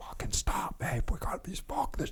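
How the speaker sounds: frantic, breathy, urgent whispered shout. Retelling a friend in the back seat yelling at him: imitating a friend yelling. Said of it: "yelling at me".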